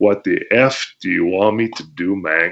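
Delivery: slow, chuckling, goofing-around, offhand tone. Retelling his own casual reply to the booker: retelling laughing speech. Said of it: "I was kind of laughing about it".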